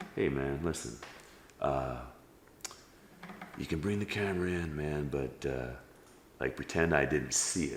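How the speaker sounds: sly, hushed, very soft under-the-breath half-whisper. Retelling a friendly warning about bringing a camera in: imitating someone half-whispering. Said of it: "he's whispering".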